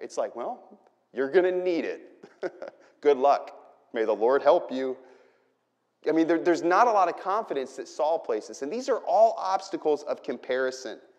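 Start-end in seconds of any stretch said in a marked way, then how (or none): 0.4-5.0 scornful, mocking, sarcastic tone. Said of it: "I think there's a lot of sarcasm there".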